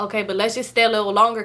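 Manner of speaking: plain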